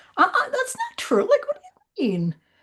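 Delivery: pitch pushed way up with big swoops. Talking about healing, act out the part of you that wanted to object, in a put-on Karen voice. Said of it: "that's my Karen voice apparently".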